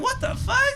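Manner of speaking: very high, shocked squeal.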